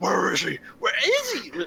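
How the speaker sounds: intimidating put-on tough-guy voice, rough and forced. Game narrator voicing the player leaning in and shouting in a man's face, forced scary, manly voice. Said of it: "most scary, intimidating, manly voice that you can".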